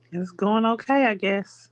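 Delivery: hesitant, doubtful tone. Asked by the interviewer how the dating is going, answering while sounding unsure. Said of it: "You sound unsure".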